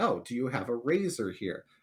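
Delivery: ordinary delivery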